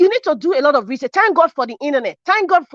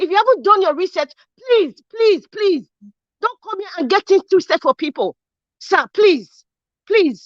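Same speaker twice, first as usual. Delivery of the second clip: earnest, impassioned, repeated pleading tone; 4 semitones higher than usual. Arguing back at another speaker who questioned her: raised voice. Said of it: "I'm disrespecting you by raising my voice".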